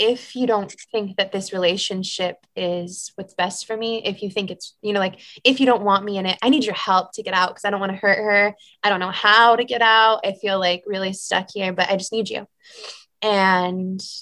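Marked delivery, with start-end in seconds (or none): 0.0-12.5 mock surrendered, earnest, heartfelt delivery. Retelling a past prayer asking for help out of a relationship: retelling a heartfelt prayer. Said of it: "a really heartfelt prayer".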